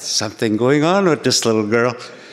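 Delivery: normal talking voice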